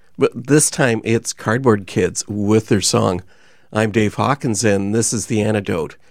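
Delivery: ordinary talk, nothing marked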